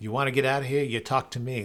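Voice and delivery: put-on Australian accent. Doing his Mad Max bit, in a terrible Mel Gibson Australian accent. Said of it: "That's my uh, terrible Australian accent".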